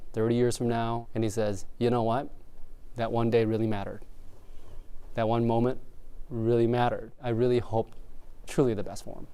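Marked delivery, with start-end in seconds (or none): none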